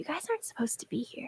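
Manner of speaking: fast, breathy, hushed whisper of a tiny creature. Game master voicing a tiny creature to a player, whispering tiny creature. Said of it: "you hear a voice whisper next to your ear".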